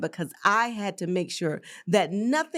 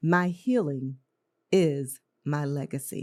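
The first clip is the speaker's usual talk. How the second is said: much slower than usual; 4 semitones lower than usual. Host finishing an affirmation for listeners to repeat after her: slow. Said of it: "I'm going to say it slow".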